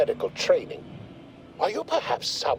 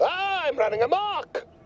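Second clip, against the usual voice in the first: high-pitched mock scream. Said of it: "Sometimes with screaming".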